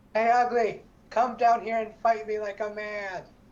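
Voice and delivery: yelled taunting tone. A player's character yells a challenge at an ogre during a tabletop game: yelling taunt. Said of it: "I'm gonna yell at the ogre".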